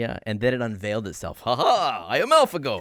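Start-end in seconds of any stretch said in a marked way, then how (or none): 1.4-2.8 very slow, loud, high, hammy fake Russian accent. Voicing a computer revealing itself after winning games: put-on Russian accent. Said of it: "Why does it have a Russian accent".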